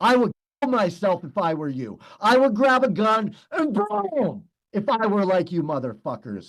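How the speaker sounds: intense, furious, raw unchecked anger. Threatening to kill himself if he were the others: intense anger. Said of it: "That's intense anger".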